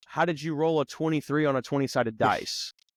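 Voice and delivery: normal talking voice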